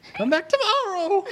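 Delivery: very high squeak, menacing but failing. In a game, a character tries to intimidate farmers but squeaks. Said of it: "but he squeaks".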